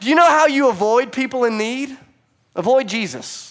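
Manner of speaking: mock high-pitched yelling, hollering. Retelling watching a sermon with Sydney, retelling yelling at the TV. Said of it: "I'm like yelling at the TV".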